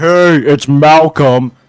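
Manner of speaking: extremely monotone voice. Retelling how Malcolm introduced himself, imitating Malcolm's monotone. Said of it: "the most monotone voice ever".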